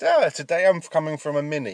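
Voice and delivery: slow, drawn-out, stretched outside-broadcast presenter delivery. Joking about doing an outside broadcast: Cheggers impression. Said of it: "That's my impression of Cheggers".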